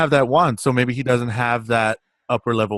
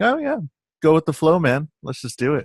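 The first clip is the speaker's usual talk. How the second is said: relaxed, unbothered, easygoing manner; 4 semitones higher than usual. Picturing how the wizard would talk: laid-back Dumbledore voice. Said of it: "I just picture my Dumbledore as just like".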